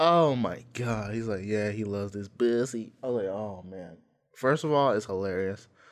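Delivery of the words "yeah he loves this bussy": exaggerated camp-sounding voice.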